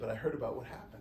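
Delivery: ordinary talk, nothing marked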